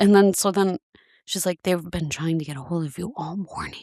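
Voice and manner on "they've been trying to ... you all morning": hushed stage half-whisper under the breath. Retelling being told Fox News called, the speaker imitates the woman half-whispering. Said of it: "Why is she whispering?".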